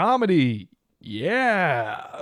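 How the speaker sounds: booming, loud, sing-song, swooping stage showman voice. Retelling a comedian's opening line on stage: imitating the comedian's tone. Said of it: "Exactly in that tone of voice".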